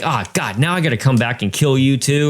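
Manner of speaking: put-on frustrated killer doll voice. Retelling a favourite movie line: frustrated, pissed-off Chucky voice. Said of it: "Chucky and Brad Dourif are frustrated and pissed off".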